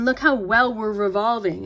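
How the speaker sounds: mocking, sarcastic tone. Making a point, then admitting the remark was meant: sarcastic. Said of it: "I'm being sarcastic".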